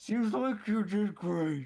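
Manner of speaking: very loud, very high, speaking with mouth full. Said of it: "Catbeard with half a pickled herring out of, out of his mouth".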